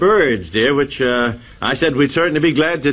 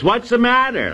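loud, pitched-up delivery; 9 semitones higher than usual. Retelling how women react when signaled on the QT, loud voice. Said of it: "they say in a loud voice".

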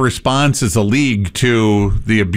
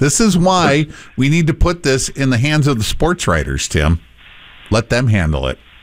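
ordinary delivery

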